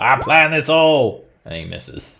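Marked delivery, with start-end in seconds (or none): 0.0-1.3 screaming, much higher and louder. Mid-game, the character Hugh recklessly attacks a wasp: Hugh screaming. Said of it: "Hugh is just screaming".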